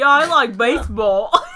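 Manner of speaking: put-on American accent. Retelling how he, challenged to do an accent, answered in an American accent. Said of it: "He really got an American accent up in there".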